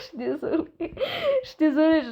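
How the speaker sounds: cracking up mid-sentence. Telling stories to her viewers, laughing while talking. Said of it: "j'en fous rire".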